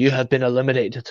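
put-on husky, hoarse Scottish voice. Quoting a big Scottish guy announcing eliminations, husky Scottish voice. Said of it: "with his real husky Scottish voice said".

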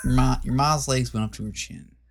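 put-on southern drawl. Repeating a joke line in different accents, now a southern accent. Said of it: "now I gotta do a southern one".

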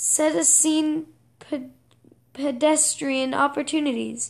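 plain reading voice

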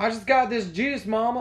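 very high put-on Southern boy accent. Retelling a son answering his mom: put-on southern accent. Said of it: "I don't know why they're Southern".

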